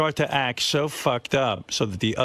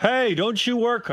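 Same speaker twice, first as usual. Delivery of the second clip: put-on yell, higher pitch; 12 semitones higher than usual. Retelling calling out to a friend ahead in the park: imitating yelling out to someone. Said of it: "I yell out to her".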